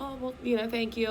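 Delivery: ordinary delivery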